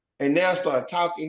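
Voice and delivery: ordinary talk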